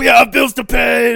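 very high, very loud, drawn-out, shrill yelling. Retelling a downstairs neighbor heard through the vents: imitating a neighbor yelling. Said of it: "yelling at his wife".

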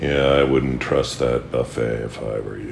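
impression with low, slow, laid-back voice.

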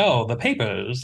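put-on old-fashioned mid-Atlantic accent. Describing how Kathryn Janeway speaks, in her old-fashioned mid-Atlantic accent. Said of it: "her mid-Atlantic accent, where she speaks like someone from like the 1920s, where she's like".

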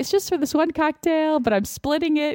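high, stumbling, halting, stammering speech. Retelling own reply to a stranger in a store line: imitating own stammering. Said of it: "I'm kinda stammering".

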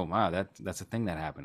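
plain

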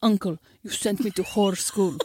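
put-on slow, deliberate Russian accent. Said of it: "she does such a great accent".

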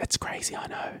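whispering. Explaining how to get out of debt, the speaker whispers. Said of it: "I don't know why I'm whispering".

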